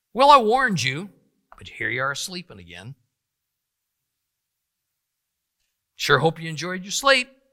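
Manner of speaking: swooping, play-acted disappointed, disgusted sarcasm. Paraphrasing Jesus speaking to his disciples: imitating sarcastic, disgusted Jesus. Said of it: "a sarcastic remark from a disappointed and disgusted Yeshua".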